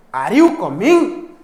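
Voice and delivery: "are you coming" rising at the end. Explaining how the voice starts low and goes high: rising pitch on are you coming. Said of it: "voice start starts लो और medium एंड गो हाई".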